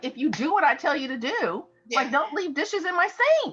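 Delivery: acted, very high-pitched, scolding yell. Retelling how she yelled at her kids back home during the pandemic: retelling her own yelling. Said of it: "I was yelling last year".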